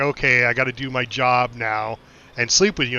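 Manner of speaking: ordinary talk, nothing marked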